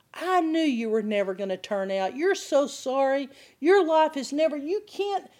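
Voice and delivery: high, mock accusing, condemning scolding voice. Describing the inner voice that turns on you after temptation, mock-condemning voice. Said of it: "start condemning you".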